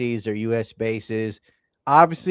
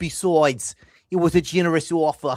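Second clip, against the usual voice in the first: put-on New York accent, pitched up; 5 semitones higher than usual. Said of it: "the New York accent I did".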